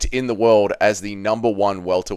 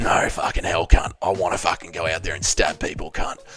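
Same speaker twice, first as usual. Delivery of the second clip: put-on evil voice, much lower pitch; 4 semitones lower than usual. Acting out evil Dougie answering another voice, in an evil Dougie voice. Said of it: "evil Dougie under his win".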